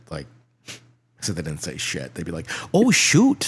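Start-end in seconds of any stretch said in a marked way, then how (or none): 2.7-3.5 put-on Irish accent, voice pitched very high. Retelling how friends reacted to the news: put-on Irish accent. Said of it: "That was sounding a little Irish".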